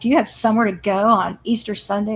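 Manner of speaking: short, curt, snippy tone. Retelling how visitors at the fence questioned a mother: imitating a snippy tone. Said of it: "they said it real snippy".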